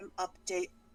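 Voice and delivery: the softest, very quiet voice. Voicing a character who turns to Trojan mid-fight: softest voice ever. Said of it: "in the softest voice ever".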